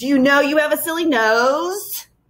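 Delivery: high hissing jeering creature voice, "nose" drawn out. Reading a story where a foul-breathed creature thrusts its face close to Tom: hissing creature voice. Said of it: "It hissed".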